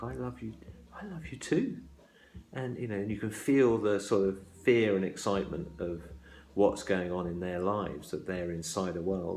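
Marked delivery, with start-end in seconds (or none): 0.0-1.8 airy, breathy, high voice. Retelling one lover answering the other on a wintry night: breathy voice. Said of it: "in a breathy voice goes back".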